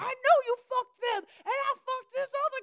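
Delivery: very high, shrill, shrieked-out holler. Retelling what people outside screamed at night: imitating someone screaming. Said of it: "Why are you guys screaming this?".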